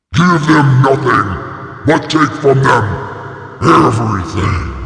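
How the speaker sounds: monster voice, pitched very deep. Rallying listeners, switching into a monster voice. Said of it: "Let me get my monster voice for this one".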